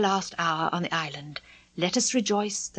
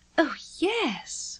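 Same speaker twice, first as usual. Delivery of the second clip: primly proper, prim and pitched-up; 8 semitones higher than usual. Wendy answers Peter's uneasy question, prim. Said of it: "Wendy said primly".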